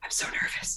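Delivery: very quiet, very soft, breathy whisper. Retelling what an acting partner whispered during the final hug: imitating Nash whispering. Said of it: "he whispers in my ear".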